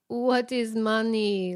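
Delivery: put-on Jamaican accent. Retelling a famous interview clip where a man is asked if he is rich, in a put-on jamaican accent. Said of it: "that was a hilarious Jamaican accent".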